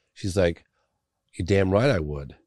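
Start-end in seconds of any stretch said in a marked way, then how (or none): 1.4-2.2 put-on furious woman voice, angry tone. Retelling a furious witness's reply about the governor: imitating a furious woman. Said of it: "she was furious at the stunt".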